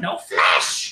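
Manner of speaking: little goblin-like cry. Voicing a goblin who yells mid-fight: goblin yelling. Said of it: "You just hear him yell".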